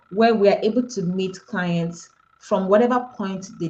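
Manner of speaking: plain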